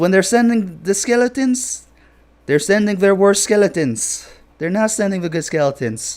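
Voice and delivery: voice slipping into loud, high Indian accent. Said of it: "my voice went Indian there".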